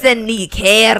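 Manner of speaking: put-on Scottish or Irish accent. Taking another try at the line: Scottish-Irish accent attempt. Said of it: "Scottish and Irish are so hard to do".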